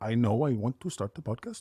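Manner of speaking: terrible, fake, very bad Swedish accent. Quoting a guy in Sweden he's working with, in the worst Swedish accent. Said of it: "That's the worst Swedish accent I could ever come up with".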